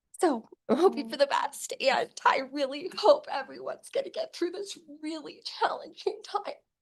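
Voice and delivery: moved, feeling coming through. Giving a public comment, hoping everyone gets through: getting emotional. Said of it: "sorry, I didn't mean to get emotional".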